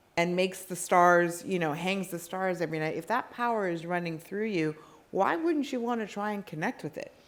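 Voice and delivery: ordinary talk, nothing marked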